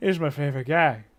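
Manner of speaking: mumbling as if asleep. Voicing a character who is still asleep: muttering. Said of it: "He's just muttering".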